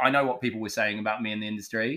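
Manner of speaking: ordinary talk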